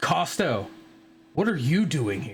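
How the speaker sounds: very solid, firm voice, swooping in pitch. Voicing an unseen figure who confronts Costa: very solid voice. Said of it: "in a very solid voice".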